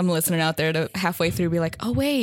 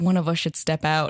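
put-on whisper, lower pitch; 3 semitones lower than usual. Retelling what someone said into the speaker's ear: imitating a whisper. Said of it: "he whispers in my ears".

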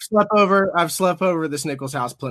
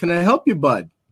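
put-on Michigan local accent; 3 semitones higher, 4 dB louder than usual. Picturing a man in a Stormy Kromer hat helping a broken-down driver: playing a local in a Stormy Kromer hat. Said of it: "be like".

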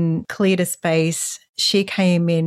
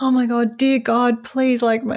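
mock, high, desperate begging tone; 6 semitones higher than usual. Describing how the speaker used to pray when told to, imitating desperate pleading. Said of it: "because I was so desperate".

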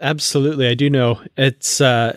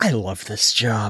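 soft, hushed, low whispered stage aside; 5 semitones lower, 6 dB quieter than usual. Retelling how the captain leans over to Una: imitating a stage whisper. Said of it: "the stage hand whisper".

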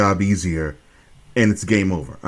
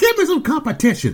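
very high-pitched yell. Retelling how Mr. Perfect yelled out at the crowd: imitating Mr. Perfect yelling. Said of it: "he would just look out in the crowd and just yell".

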